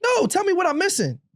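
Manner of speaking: sarcastic mock indignation. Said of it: "I know you're being sarcastic".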